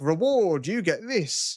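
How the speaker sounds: very slow, mechanical robotic AI voice. Recounting what the AI said when it came in, robotic AI voice. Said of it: "comes in like a robotic voice".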